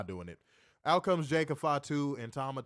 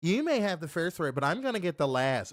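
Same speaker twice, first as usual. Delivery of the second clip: put-on teenage valley-girl voice; 3 semitones higher than usual. Recapping a WWE promo and quoting a wrestler's comeback, imitating a teenage girl. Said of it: "He sounds like a teenage girl".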